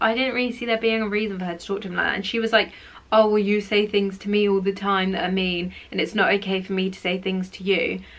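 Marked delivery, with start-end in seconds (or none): none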